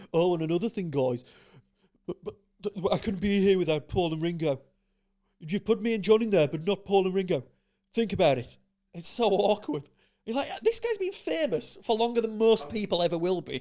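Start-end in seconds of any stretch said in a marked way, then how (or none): 0.1-9.8 imitated Birmingham accent. Retelling a Hall of Fame induction speech, in a put-on Brummie accent. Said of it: "I was doing Brummie".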